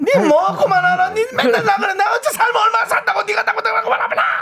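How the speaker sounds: play-acted very high-pitched, harder, fierce snapping tone. Imitating an elderly mother answering her child: imitating an elderly mother snapping back. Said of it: "더 세게 나오죠".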